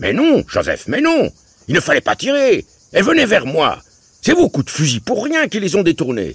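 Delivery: very high, swooping, cross, bad-tempered shouting. An uncle calls across the river to Joseph after wasted shots, bad-tempered shouting. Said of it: "il criait sur un ton de mauvaise humeur".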